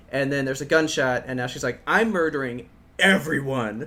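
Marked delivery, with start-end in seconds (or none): 1.8-3.8 seething, angry, pissed-off tone. Describing a game trailer, voicing the character's line: imitating someone pissed. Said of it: "Like she's pissed".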